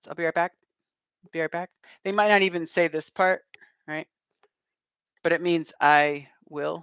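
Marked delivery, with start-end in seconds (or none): 0.1-1.7 very fast, casual, rattled-off delivery. Showing how americans usually say this phrase: said very fast. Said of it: "and they say it very fast".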